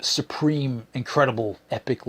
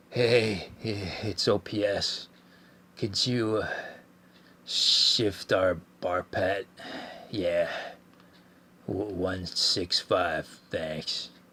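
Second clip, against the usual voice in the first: very slow, soft, still-asleep mumble; 4 semitones lower, 6 dB quieter than usual. Retelling a half-asleep officer phoning the bridge: imitating a sleepy mumbling voice. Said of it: "In his well-known "I'm still totally asleep" voice".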